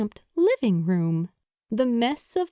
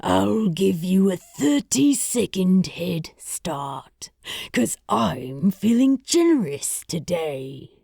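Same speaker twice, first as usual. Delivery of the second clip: deep, beastly, growling monster voice; 4 semitones lower than usual. Narrating a story, the monster speaks to the little kitty in a deep growling voice. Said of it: "his voice as deep as the pit they had tumbled into".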